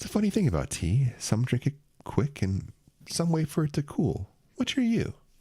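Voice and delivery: very high-pitched, conversational voice. Playing the aide who pours the tea, speaking to you in a quiet voice. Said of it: "in a quiet voice".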